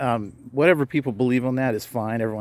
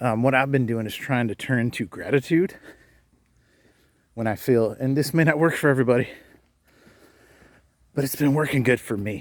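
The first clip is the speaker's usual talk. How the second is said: winded, out of breath. A speaker talks while walking, apologizing for being out of breath. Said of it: "a little out of breath".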